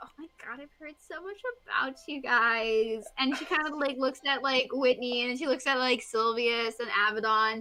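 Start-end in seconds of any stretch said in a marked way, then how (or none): 0.0-3.0 starstruck, excited, adoring gushing. Voicing a young half elf who meets the heroes: half-elf fan gushing. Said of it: "she's like".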